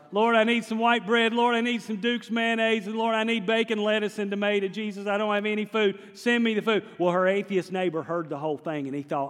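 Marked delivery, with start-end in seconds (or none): 0.1-6.8 mock imploring, earnest tone, called out loudly. Telling a story, the speaker acts out a woman's prayer, imitating loud praying. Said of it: "she starts praying really loud".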